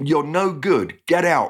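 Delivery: mock furious mother's holler, high-pitched. Narrator recalling his mum throwing him out: retelling mum's enraged holler. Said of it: "my mum hollered".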